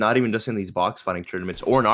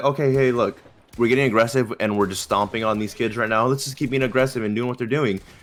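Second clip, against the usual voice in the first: ordinary talk, nothing marked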